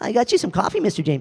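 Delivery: bright, keen and eager. Voicing the young intern character bringing coffee: eager-to-please Billy the intern voice. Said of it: "Billy the intern ... very happy to please".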